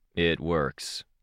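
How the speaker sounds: dull, unexcited tone. Reading a character's reply when a test works, in a dull, unexcited tone. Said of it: "in the dullest, most unsurprised, unexcited tone he could manage".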